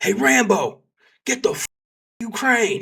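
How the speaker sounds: very high, shrill, loud shout. Retelling a special agent calling out across a parking lot: imitating someone yelling. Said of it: "and he yells".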